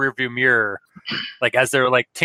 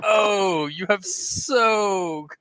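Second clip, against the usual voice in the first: mimicked slow, drawn-out lady voice, higher; 6 semitones higher than usual. Imitating the other speaker's voice for the lady behind the door: drawn-out lady voice. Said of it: "The very, like, drawn out".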